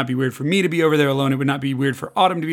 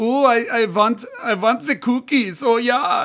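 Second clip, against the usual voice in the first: put-on German accent, much higher, slower; 8 semitones higher than usual. Speaker describing a wiener dog from a movie, doing Weenie's weird German accent. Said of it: "weird German accent".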